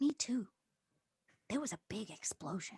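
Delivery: tiny, very soft, very quiet small voice. Answering someone glad they're okay after hiding, in a very small voice. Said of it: "small voice".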